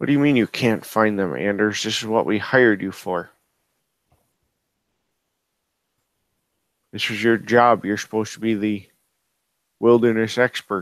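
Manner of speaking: muttering quietly under the breath. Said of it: "Under his breath, he says".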